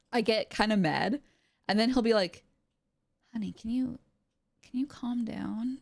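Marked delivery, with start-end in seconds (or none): 3.3-5.7 gentle, soft, worried, coaxing murmur. Retelling how someone reacts when she gets mad: imitating Farrell speaking softly. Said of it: "he'll say it real softly".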